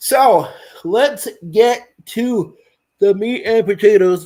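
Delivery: words pushed through a yawn. Moving on to tonight's main topic, yawning while talking. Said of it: "Sorry for yawning".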